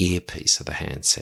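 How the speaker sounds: ordinary delivery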